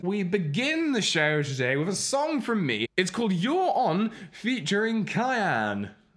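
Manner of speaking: awful put-on English accent. Host opening the show for viewers in other countries, in an awful english accent. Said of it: "the show in a in an awful English accent".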